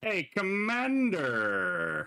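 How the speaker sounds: large booming voice, very high and swooping. A voice suddenly calls out to the commander in the silent streets; large booming voice. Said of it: "a large booming voice is suddenly heard".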